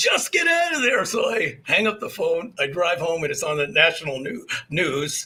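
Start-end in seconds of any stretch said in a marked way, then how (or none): 0.0-1.0 very high, play-acted shouting. Retelling a phone call where the other man yelled: imitating someone yelling. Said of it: "He's yelling at me".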